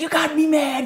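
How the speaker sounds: screaming at a very high pitch. Recounting a character's phone call after killing Maggie, retelling a scream. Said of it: "he's screaming".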